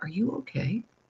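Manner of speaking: quiet, hushed, soft-spoken voice. Retelling leaning over to speak to her, quietly. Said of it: "I just said to her quietly".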